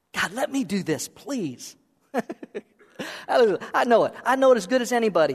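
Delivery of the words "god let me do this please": quieter mock begging, acted pleading tone. A speaker acts out someone volunteering to serve God, imitating someone begging. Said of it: "He's begging to go".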